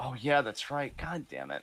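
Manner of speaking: deflated, disappointed, let-down tone. Realizing a live show clashes with an appointment: disappointed. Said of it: "You sound disappointed".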